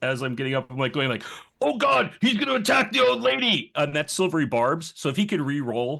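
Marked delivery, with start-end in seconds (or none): 1.6-3.7 very high, raspy, all-out super-loud in-character yell. Voicing a character warning others during a fight: yelling super loud. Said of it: "I'm just gonna yell out, like, super loud".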